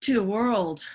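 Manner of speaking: theatrical delivery. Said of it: "That's so dramatic".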